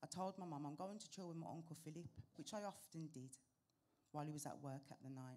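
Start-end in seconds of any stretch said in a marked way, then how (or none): none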